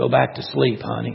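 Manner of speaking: said quietly. Narrator reads a father answering his stirring daughter as he leaves the room, quiet. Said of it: "says quietly as he leaves the room".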